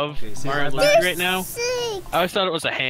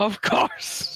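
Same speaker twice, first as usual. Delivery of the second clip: put-on villain voice; 3 semitones higher than usual. Repeating the line after being asked about it: M. Bison voice. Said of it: "Did you just do M. Bison?".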